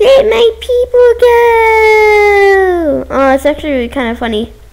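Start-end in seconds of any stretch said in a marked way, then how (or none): 0.0-3.1 very slow, tiny, high little voice. Quoting what an ore said, in a tiny voice. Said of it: "in a tiny voice".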